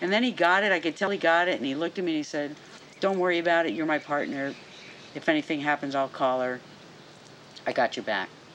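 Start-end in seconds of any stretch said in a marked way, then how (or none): none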